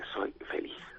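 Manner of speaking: hushed, very quiet whisper. Saying it very quietly so as not to offend: very quiet. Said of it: "esto voy a decirlo muy bajito".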